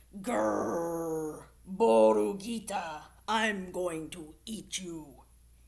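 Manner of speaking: very loud, menacing, growling coyote voice. Narrator reads a coyote speaking to a little lamb, growling coyote. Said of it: "The coyote growled".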